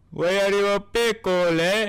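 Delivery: put-on high-pitched Indian accent. Reacting to a cartoon parody video, Brian with Indian accent. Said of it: "why is Brian Indian?".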